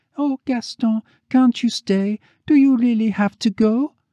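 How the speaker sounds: tiny, tearful, very high, small pleading voice. Eugenie speaks to Gaston as he is leaving, in a small, soft voice. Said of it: "small, soft voice".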